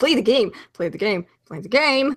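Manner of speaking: put-on growing impatience. Retelling a dream where a man kept demanding, imitating growing impatience. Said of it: "each time sounding more impatient".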